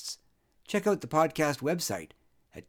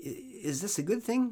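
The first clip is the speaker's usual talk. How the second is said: hesitant, uncertain tone with pitch rising upward; 7 semitones higher, 3 dB quieter than usual. After a woman announces she is pregnant, the narrator asks her uncertainly.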